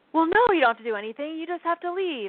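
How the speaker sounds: fast, annoyed, irritated brush-off. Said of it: "she got all annoyed at me".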